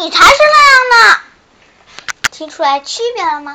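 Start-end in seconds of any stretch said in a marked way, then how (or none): 0.0-1.2 very loud, high, tiny seahorse voice. Telling a children's story, voicing the little seahorse character. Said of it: "小海马的声音是".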